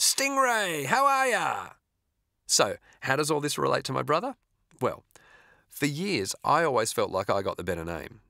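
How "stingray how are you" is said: very high, gleeful, joyful voice, drawn out. Narrator recounting a family's old houseguest greeting them by the name he gave, retelling a joyful exclamation. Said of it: "he exclaimed with joy".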